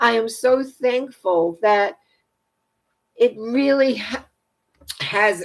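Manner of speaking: voice choking up with emotion. Giving thanks for the many people holding the light: choking up with emotion. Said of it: "I'm choking up here".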